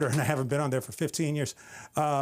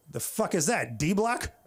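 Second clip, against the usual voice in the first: plain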